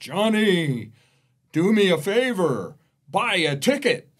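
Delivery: huge, booming, high-pitched voice. Telling a joke about a man praying to win the lottery, in a giant booming voice. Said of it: "this giant booming voice comes out of the top of the cathedral and says".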